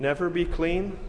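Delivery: ordinary talk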